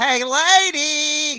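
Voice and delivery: very high, loud call, with lady drawn out. Showing the one Jerry Lewis impression the speaker can do: Jerry Lewis voice. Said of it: "I can't do any other Jerry Lewis other than".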